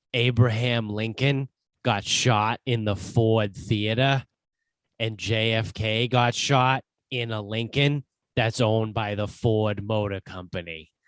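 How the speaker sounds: slow, fake, put-on Boston accent. Saying a line the way a believer would: put-on Boston accent. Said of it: "I say this in like the boss, the dickhead Boston accent".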